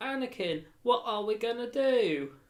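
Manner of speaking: put-on high-pitched little young boy's voice. Imitating the kid in the prequels who asks Anakin for help: imitating the prequels kid. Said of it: "That's quite a good impression".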